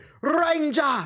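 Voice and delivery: very high, squeaky video-game orc voice. Retelling how a returning orc taunts the player: imitating a game orc. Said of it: "he would say".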